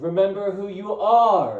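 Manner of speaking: booming, very slow ghostly voice, "are" stretched out. Recalling how a voice role was performed: Ghost Mufasa voice. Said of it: "I did it more like".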